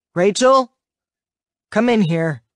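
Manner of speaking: flat, expressionless, mood-hiding voice. In a story, a father calls his daughter in from his office: flat voice. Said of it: "in a flat voice that camouflages his mood".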